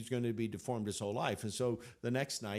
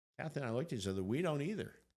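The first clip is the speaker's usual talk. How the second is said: ordinary talk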